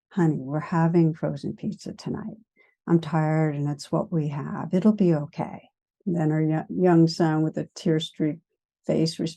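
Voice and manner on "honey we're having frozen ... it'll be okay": calm, even, steady, soft-spoken gentle voice. Retelling a tired mother calming herself and answering her young son: steady, gentle voice. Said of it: "in a very, very kind of steady, gentle voice".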